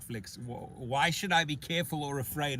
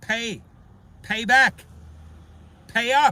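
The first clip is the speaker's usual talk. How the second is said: very loud put-on Scottish accent at full volume; 9 semitones higher, 13 dB louder than usual. Complaining about fees charged to a hardworking person, in a scottish accent. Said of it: "what do you think of my Scottish accent?".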